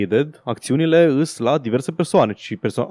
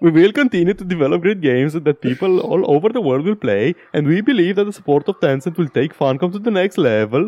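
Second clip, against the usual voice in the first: high-pitched, comic, mock voice; 5 semitones higher than usual. Reading out a company statement about Tencent: Swedish Chef voice. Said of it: "Am voie să fac asta".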